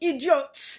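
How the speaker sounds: horrible fake Nigerian accent. Imitating how nigerian movies say a word: horrible nigerian movie accent. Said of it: "Please forgive my horrible, horrible accent".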